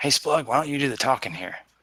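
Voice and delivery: quiet, hushed stage half-whisper aside. Half-whispering to Splug in character while strangers stand by: half-whispering to Splug. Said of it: "I'll kind of whisper to".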